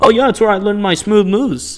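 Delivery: bad vaguely Scottish put-on accent. Showing how a player could say the line, in a terrible, accidentally scottish accent. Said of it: "that was a terrible accent. I wasn't even that wasn't even supposed to be Scottish".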